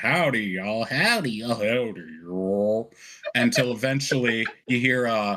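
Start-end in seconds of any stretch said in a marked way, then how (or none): 0.0-2.9 glitchy, wobbling pitch swooping up and down. Voicing a robot whose voice glitches as it is repaired: Tin Man's voice fluctuating up and down. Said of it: "Tin Man's voice fluctuating up and down".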